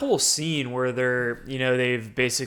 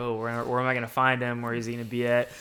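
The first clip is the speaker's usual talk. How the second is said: ordinary talk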